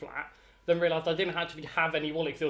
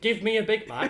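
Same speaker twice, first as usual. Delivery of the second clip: mock drunk, high-pitched hollering scream; 5 semitones higher, 4 dB louder than usual. Reminding the other speaker how she acted at McDonald's, retelling a scream. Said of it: "You screamed".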